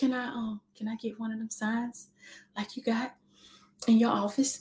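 put-on mimicked soft-spoken child voice. A mother retells her daughter asking for a light-up sign, imitating her daughter's soft voice. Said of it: "She talked so soft".

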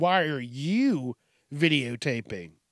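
slow, patronising, condescending tone. Retelling a woman at the gym questioning someone filming: imitating a condescending tone. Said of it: "a condescending tone".

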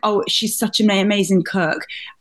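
ordinary delivery

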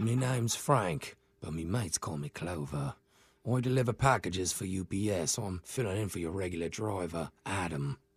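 hushed whisper. Phoning someone as a package driver, whispering. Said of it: "are you whispering".

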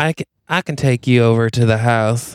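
put-on Texas twang. Improvising a story, voicing the tall man Desmond with a Texas twang. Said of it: "he's got a twang".

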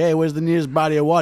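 put-on Florida accent. Retelling how a man asked his dad something: imitating a Florida accent. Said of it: "Is this a Florida accent?".

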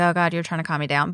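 normal talking voice

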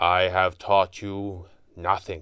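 sorrowful, sad, heavy-hearted delivery. Roshan answers his elder student, who waits expecting congratulations, quiet. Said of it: "he said quietly".

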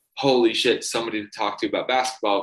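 plain

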